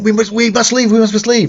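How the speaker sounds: put-on frantic, panicked, urgent voice, very high pitch. Recounting the other people as the group runs away, imitating panicked people. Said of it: "the other people are like panicked".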